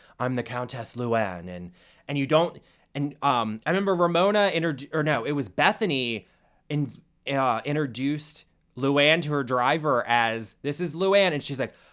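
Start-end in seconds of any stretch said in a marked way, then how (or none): 0.2-1.5 heavy, deep, low smoker's voice. Imitating the countess introducing herself: Countess Luann deep smoker's voice. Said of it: "She has a deep smoker's voice".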